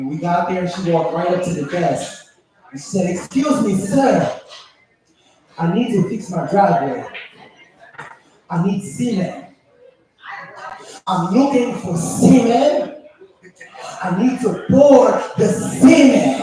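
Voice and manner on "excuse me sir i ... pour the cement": put-on speaking with a Haitian accent. Retelling an aunt asking at a store desk: imitating aunt's strong Haitian accent. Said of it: "she had a strong accent".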